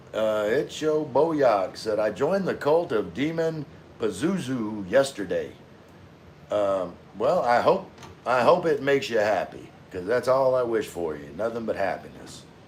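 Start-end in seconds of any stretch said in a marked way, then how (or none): none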